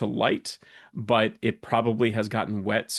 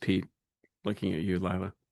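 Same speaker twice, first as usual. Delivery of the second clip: plain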